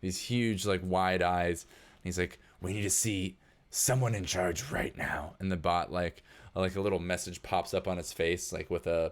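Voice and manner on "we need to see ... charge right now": odd, weird, gruff character voice. Voicing a robed man arguing with a bot: weird gruff voice. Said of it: "He's got kind of a weird, gruff voice".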